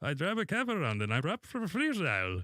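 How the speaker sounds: put-on Moroccan accent. Showing another player how to talk like a taxi driver: Moroccan taxi driver accent. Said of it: "don't go Bangladesh, you know, Indian".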